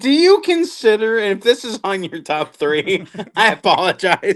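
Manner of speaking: talking through laughter. Asking another speaker a question about movies, laughing while talking. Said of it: "Why are you guys laughing?".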